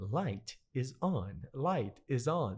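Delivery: very slow, small, car-like announcement voice. Speaker recalls a car's spoken reminders to the driver, imitating car's little voice. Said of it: "her little voice would say".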